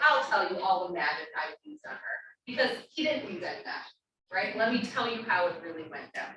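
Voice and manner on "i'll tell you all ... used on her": ordinary talk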